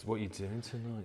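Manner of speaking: very quiet, understated, low-key, low-energy delivery. Showing how he talks in real life, in a quiet low-key Maddox impression. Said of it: "he's really low key, very quiet. Yeah, he talks like this".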